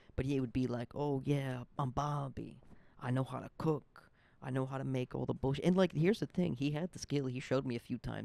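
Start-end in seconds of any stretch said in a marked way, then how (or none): 1.0-5.7 put-on poorly done Italian accent. Imitating a chef who talks himself up: Bobby in an Italian accent. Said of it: "I don't even know if I'm doing the Italian right".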